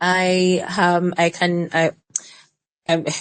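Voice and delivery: very slow, halting, stumbling stammer. Thanking Buki after an extensive explanation, stammering. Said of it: "I'm stammering".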